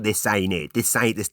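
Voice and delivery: put-on nagging, complaining voice, repetitive. Retelling Pam's reply at the event, imitating Pam's nagging voice. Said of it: "like a nagging voice".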